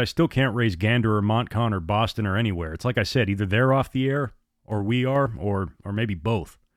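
ordinary delivery

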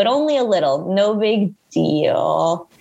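slow, sarcastic, mocking tone. Retelling what a date said after saying he loved her: imitating a sarcastic voice. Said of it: "he said with a sarcastic voice".

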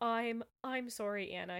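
ordinary delivery

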